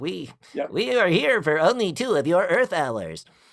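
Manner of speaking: put-on sci-fi alien visitor voice. Talking about how people portray aliens, the speaker demonstrates: alien voice. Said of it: "like alien voices".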